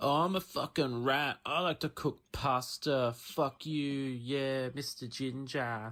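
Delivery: very deep, muttered, hushed cartoon rat voice. Recording a voice clip, doing a Ratatouille rat impression. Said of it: "This is my impression of uh, Ratatouille".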